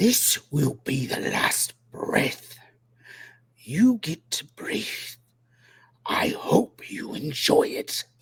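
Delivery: vicious, angry snarling voice. The game narrator voices the angry mother snarling at the player. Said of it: "she snarls at you".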